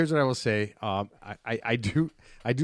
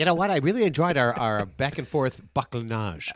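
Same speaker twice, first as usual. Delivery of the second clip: high, helium-squeaky, exaggerated, overdone caricature voice; 4 semitones higher than usual. After Teddy gives his last thoughts, another speaker mocks him: exaggerated Teddy impression. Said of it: "just suck in helium".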